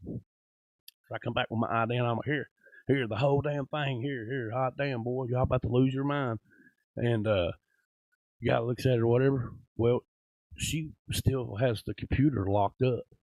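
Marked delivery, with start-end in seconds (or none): 2.3-6.4 put-on angry, pissed-off outburst. Retelling what he said coming back with his ID: retelling his own angry outburst. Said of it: "'cause I'm pissed".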